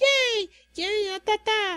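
very high, bouncy, hyper cheering voice, acted out. Contrasting two characters, acting out the staff: mock-hyper Kanaka voice. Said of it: "I'm hyper!".

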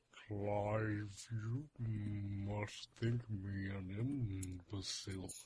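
very slow, soft, hushed, time-dilated drawl. Showing how he talks while using time dilation: very slow time-dilated speech. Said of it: "He's actually talking like this".

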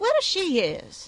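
snapped almost defiantly. A girl answers a question put to her, snapping almost defiantly. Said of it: "snapped the girl almost defiantly".

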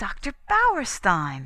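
loud, animated sing-song voice with swooping pitch. Hearing a visitor's voice in the hall, a character exclaims. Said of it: "exclaimed Cynthia".

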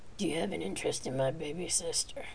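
sultry, seductive, purring growl. A man questions a stammering woman in the same seductive growl. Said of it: "He asked in the same seductive growl".

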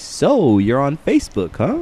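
creepy drawling voice with swooping sing-song. Describing people who creep up behind your desk, a speaker does a put-on creepy drawl. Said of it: "drawling the creepy voice".

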